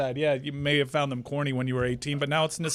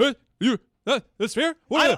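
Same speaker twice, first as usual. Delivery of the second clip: mumbling put-on voice, higher pitched; 9 semitones higher, 3 dB louder than usual. Asking about the sphere as a joke: mumbled put-on impression. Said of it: "I don't know who you're doing an impression of there".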